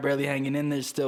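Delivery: ordinary delivery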